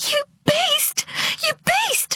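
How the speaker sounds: piercing, very high-pitched, shrill shriek. As a man lashes others with a strap, a woman shrieks at him. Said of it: "shrieked Dolore".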